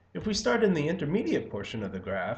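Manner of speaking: small voice crack partway through. Speaker explaining an economics graph, with a voice crack. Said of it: "that was a nice little voice crack".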